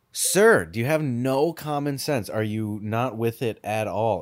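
usual speaking voice

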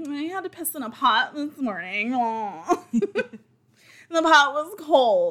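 spoiled Victorian aristocrat voice, high and slow. Acting out a complaint as a pampered rich person: spoiled victorian aristocrat voice. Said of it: "spoiled Victorian voices".

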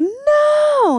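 eerie, very high, stretched, drawn-out shriek. Retelling hearing a girl scream during quiet prayer: imitating a girl's scream. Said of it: "she's screaming".

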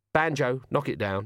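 ordinary delivery

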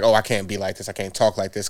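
plain

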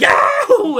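very high, loud whooping battle-cry shout. Mocking the bad writing of a superhero film: imitating Aquaman screaming. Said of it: "he just screamed".

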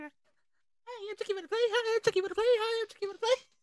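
very high-pitched voice. Picturing a swing with a Chucky face, the speaker voices it in a super high pitch. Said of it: "that super high pitch".

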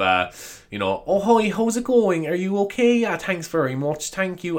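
very slow, polite, posh-leaning voice. Explaining the accent the speaker puts on when going into shops: put-on shop accent. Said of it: "my accent when I go into shops".

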